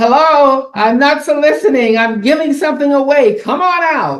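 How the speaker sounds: play-acted very high-pitched, loud yell. Retelling calling to a gentleman in the back of his shop, retelling a yell. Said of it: "and I'm yelling".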